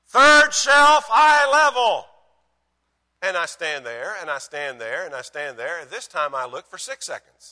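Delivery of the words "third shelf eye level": very high, very loud yell, called from afar. Retelling his wife yelling back from the back bedroom: retelling his wife's yell. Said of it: "And she yells".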